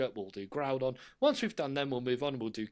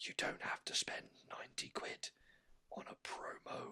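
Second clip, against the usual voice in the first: seething whisper, rage held in. Talking about card prices, whispering to contain rage. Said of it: "I'm whispering to contain my rage".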